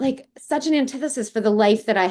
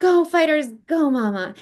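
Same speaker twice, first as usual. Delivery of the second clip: acted-out exuberant, high, excited child's cheer; 6 semitones higher than usual. Recalling her four-year-old son calling down the stairwell as she left, retelling an exuberant shout. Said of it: "shouts out in this like exuberant voice".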